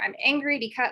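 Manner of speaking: ordinary delivery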